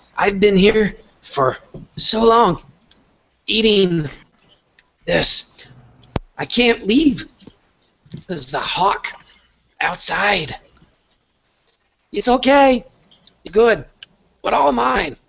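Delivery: very high-pitched squeaky rat voice, between bites. Game narrator voicing a rat eating food in a cave, rat voice between bites. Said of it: "this rat ... in between bites ... He goes".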